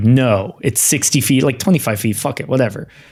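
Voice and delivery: ordinary talk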